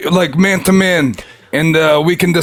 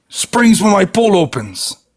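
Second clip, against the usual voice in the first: slow, put-on Russian accent slipping in. Playing a character scolding someone for swimming in the pool, slipping into a Russian accent. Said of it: "I got a little bit Russian there".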